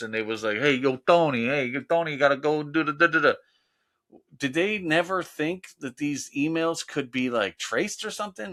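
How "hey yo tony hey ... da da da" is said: put-on mobster voice. Comparing emails to how the mob used to talk: imitating mob talk. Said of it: "the mob when they used to talk like this".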